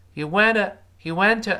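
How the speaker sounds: "went" said quickly and lightly in passing. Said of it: "一带而过".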